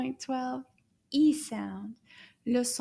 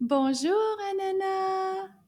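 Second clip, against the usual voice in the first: loud, high called-out voice, one word drawn out; 7 semitones higher than usual. Leading the class in greeting a puppet: nice loud voice. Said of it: "in a nice loud voice".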